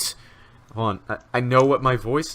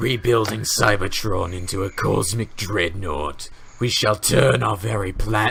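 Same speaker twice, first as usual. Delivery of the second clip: bad put-on villain voice, slow and faltering. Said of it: "I can't do this voice either".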